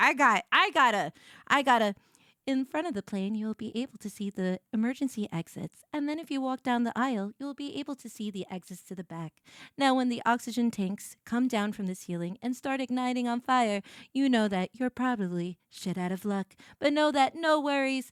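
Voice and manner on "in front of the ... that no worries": flight attendant cabin announcement voice. Showing the voice someone said they put on, airplane stewardess voice. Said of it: "you want to see my airplane steward?".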